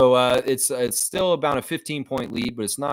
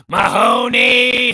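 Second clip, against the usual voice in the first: put-on angry yell, higher and louder; 11 semitones higher, 8 dB louder than usual. Retelling how Captain Harris got mad and yelled: imitating Captain Harris yelling. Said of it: "he'd be yelling".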